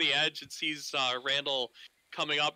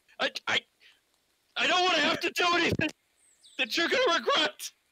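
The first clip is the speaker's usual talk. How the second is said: jittery sailor voice, higher and louder; 14 semitones higher, 4 dB louder than usual. Voicing a sailor who draws a sword on a climber: nervous sailor. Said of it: "he's like nervous".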